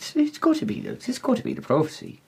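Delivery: high, awestruck, awed murmur.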